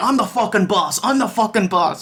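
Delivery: mock angry, barked, forceful delivery. Retelling how Heenan shouts at Andre after the match: imitating Heenan shouting. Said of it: "so he just shouts at Andre".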